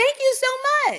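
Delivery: voice pitched very high throughout. Retelling thanking the people who let the speaker out, voice all high. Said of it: "Voice all high".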